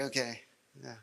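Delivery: quiet, mock bored, uninterested tone. Retelling his wife's reply to his announcements: imitating a bored reply. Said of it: "My wife was a little bored of it".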